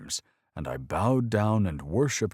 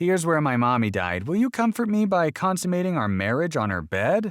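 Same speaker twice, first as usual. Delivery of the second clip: very high, geeky, nerdy put-on voice; 11 semitones higher, 5 dB louder than usual. Narrator reads the boy's line after he hears the story, in a nerdy voice. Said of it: "In a nerdy voice he said".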